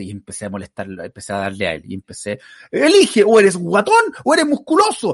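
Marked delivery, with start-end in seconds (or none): 2.7-5.1 high, loud mocking shout. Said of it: "seguía hablando fuerte".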